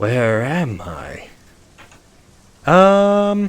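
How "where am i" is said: forlorn, echoing, lost ghost voice, calling out. Reading aloud, the speaker voices a forlorn spirit in a soft echoing voice. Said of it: "A soft voice echoes out from the deep".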